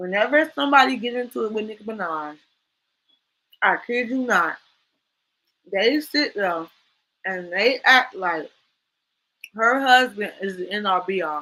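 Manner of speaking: talking while chewing, mouth full of candy. Speaker talks about people going after [name], talking while eating candy. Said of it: "I'm eating some candy".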